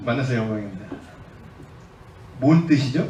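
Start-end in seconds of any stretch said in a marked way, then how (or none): 0.0-0.8 put-on voice, dropped very deep and low. Mimicking a young suited executive handing over a business card: lowered deep voice. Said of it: "목소리 깔고".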